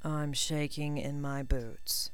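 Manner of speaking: bone-dry, slow deadpan delivery. He answers a threat made against him: said dryly. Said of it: "Draco said dryly".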